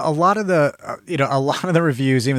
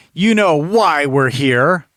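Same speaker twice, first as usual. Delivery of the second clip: stilted, forced delivery, slower; 2 semitones higher, 4 dB louder than usual. Reviewing a movie, the speaker acts out its stilted, forced line delivery. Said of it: "Lines were delivered like this".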